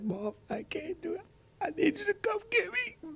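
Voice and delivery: very high, tearful, put-on crying. Retelling a daughter's tearful phone call: imitating someone crying on the phone. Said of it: "It was more like".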